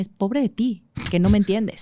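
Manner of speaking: plain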